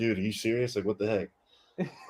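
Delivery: mock-muttering under breath. Golfer retelling a shot pulled left during a coach's call: retelling a mutter under breath. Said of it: "like under my breath".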